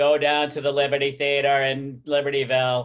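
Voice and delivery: put-on New York accent. Putting on a New York voice for the listeners: mocking New York accent. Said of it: "I'm making fun of a New York accent".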